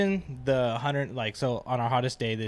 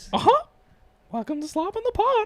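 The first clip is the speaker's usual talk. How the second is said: tiny, very high cartoon mouse character voice; 6 dB louder than usual. Asked on the podcast for a best Mickey impression, the speaker says the welcome: Mickey Mouse voice. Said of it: "Slob on the Pod in Mickey voice".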